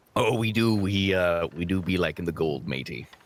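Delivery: put-on low, slow pirate drawl, a bit exaggerated. Voicing a ship sailor answering about gold: extra piratey flair. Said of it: "puts on a little bit extra piratey flair in his voice".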